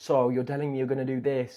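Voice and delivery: very loud, high, really annoying snippy tone. Describing how some girls talk to you, imitating a really annoying tone. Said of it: "speak to you in this sort of like a really annoying like way".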